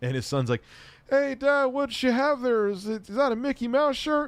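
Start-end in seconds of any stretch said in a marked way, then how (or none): 1.1-4.3 very high, stagey, wooden bad-acting delivery. Retelling a comedy scene, quoting the son: imitating the worst actor ever. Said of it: "the worst actor ever".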